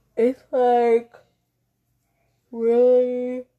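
words pushed through a yawn. Podcast host introducing the episode, talking through a yawn. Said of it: "Sorry, I was yawning".

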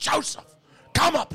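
put-on very high, powerful, commanding, intimidating holler. Retelling how they yelled for their son to come upstairs: retelling an intimidating yell. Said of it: "in my most intimidating and powerful voice, I yell".

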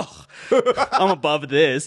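high, scoffing, superior, dismissive tone, acted out. Describing a man scoffing at the professor's music sheet, mock-scoffing. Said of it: "scoffs at it".

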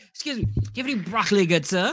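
put-on British accent. Acting out a neighbor asking to borrow broccoli: put-on British accent. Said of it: "why they're British all of a sudden".

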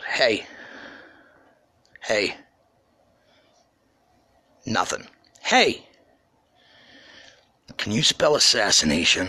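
voice kept down, just audible, under breath. Retelling what he said as a ten-year-old to a couple: imitating a hushed voice. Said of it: "talk to them in a hushed voice".

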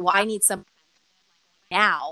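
put-on defensive voice. Retelling how he answered after being turned down: imitating a defensive reply. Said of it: "he just kinda got really defensive".

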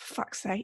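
hushed, whispered mutter under the breath. Retelling what a three-year-old said under her breath: imitating a quiet mutter under the breath. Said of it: "very quietly under her voice".

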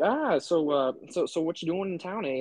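put-on Minnesota accent. Retelling what local guys at a bar asked, imitating a Minnesota accent. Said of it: "everyone's accent here".

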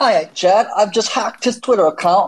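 put-on Cockney accent, very high pitched. Speaker greets Chad in a put-on voice: Cockney accent. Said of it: "Cockney accent".

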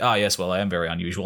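imitated suave voice. Retelling a character's reply to a remark: imitating a suave reply. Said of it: "tries to kinda make it kinda suave".

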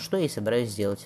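ordinary delivery

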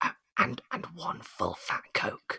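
very quiet, halting, stumbling, hushed whisper. Retelling a bar customer's order: imitating a customer whispering. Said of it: "leaned in towards me and whispered".

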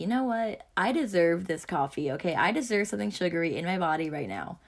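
ordinary talk, nothing marked

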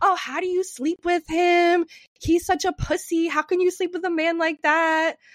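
goading, needling, high-pitched taunting jeer. Recounting how a man screamed at the speaker, imitating someone screaming. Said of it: "he is screaming at me".

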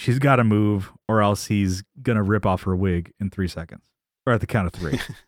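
ordinary delivery

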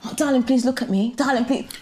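insistent, coaxing, sweet-talking pleading. Retelling how a man forcing a drink on her kept saying: imitating a man pleading. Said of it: "saying stuff like".

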